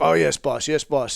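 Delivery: eager, keen, creaky-voiced reply. Retelling how informants answer an order to stay quiet: imitating an eager informant. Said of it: "and they're like".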